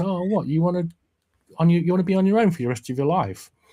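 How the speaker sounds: really concerned, rising pitch. Retelling a scene, imitating Lister sounding really concerned. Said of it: "sounds really concerned".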